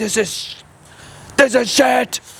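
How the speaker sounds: put-on angry yelling. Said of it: "Start yelling at the chefs".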